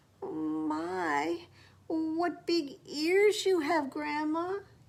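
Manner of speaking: high croaking voice with long-stretched "my". The narrator reads the wolf speaking to Grandma, croaking. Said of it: "the wolf croaked".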